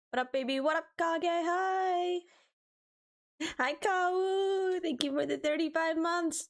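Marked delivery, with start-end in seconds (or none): 4.8-6.4 voice breaking and cracking mid-line. Speaker greeting people by name, voice cracking. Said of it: "my voice cracked".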